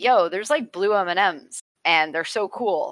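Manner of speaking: plain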